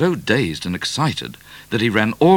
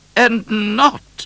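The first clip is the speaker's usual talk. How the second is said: severe, stern, very high voice; 14 semitones higher, 4 dB louder than usual. The Queen answers Midnight from the top of the stairs, sternly. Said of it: "said the Queen sternly".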